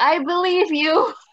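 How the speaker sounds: amused, laughed-through answer. Retelling a funny exchange, the speaker acts out their own reply: retelling a chuckled reply. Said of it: "I just chuckle and I'm like".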